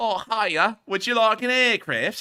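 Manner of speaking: very high, loud, put-on Liverpool Scouse accent. Imagining people from Liverpool offering an aircraft: imitating Liverpool locals. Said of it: "ask the people from Liverpool".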